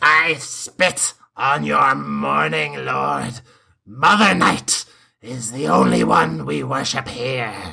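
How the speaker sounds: rasping, rough, creaky voice called across distance. Voicing a flying witch answering a group from far away: Baba Yaga shouting. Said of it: "she shouts out".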